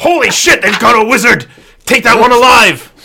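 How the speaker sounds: shouting loudly, pitched high. Voicing a guard in a fight who yells to the others: guard yelling. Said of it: "you hear him yell".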